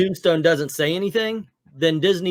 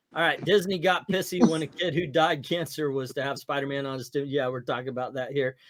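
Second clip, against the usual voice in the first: normal talking voice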